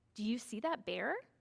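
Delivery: upward inflection at the end. Showing how to read a question from a book aloud, voice rising at the end. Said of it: "you might make your voice go up at the end".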